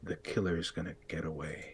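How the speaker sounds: said softly, up close. Telling the player what a figure says before vanishing, quietly as if in their ear. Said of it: "he just quietly says to you".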